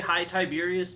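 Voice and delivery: plain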